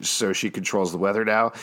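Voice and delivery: ordinary talk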